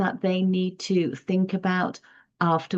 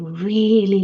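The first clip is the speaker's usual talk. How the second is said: leaning hard on really; 4 dB louder than usual. Speaker demonstrating how emphasis shows feeling about a book: stress on 'really'. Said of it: "then I've given you more emphasis and more expression".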